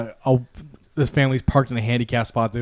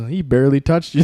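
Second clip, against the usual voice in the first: normal talking voice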